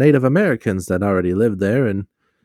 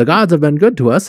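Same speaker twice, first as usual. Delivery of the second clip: vintage 1920s newsy radio-style voice; 6 semitones higher, 4 dB louder than usual. Acting out a holiday announcement bit in a 1920s newsy radio voice. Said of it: "1920 newspaper radio voice, yeah. ... the newsy voice".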